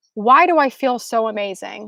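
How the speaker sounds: ordinary talk, nothing marked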